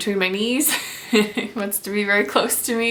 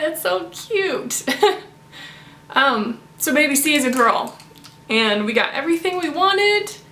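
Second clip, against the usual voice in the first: on the verge of crying, teary, choked up; 7 semitones higher than usual. Expecting mother sharing that baby C is a girl, about to cry. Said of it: "I'm gonna cry".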